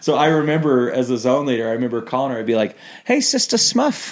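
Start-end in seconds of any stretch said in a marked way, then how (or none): 3.0-4.1 put-on New Zealand accent, pitched high. As a zone leader phoning a sister missionary, speaking in a New Zealand accent. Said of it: "I'd speak in my New Zealand accent".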